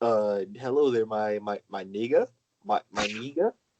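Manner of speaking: put-on French accent. Retelling what an exchange student said: imitating French exchange student accent. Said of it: "with that French accent".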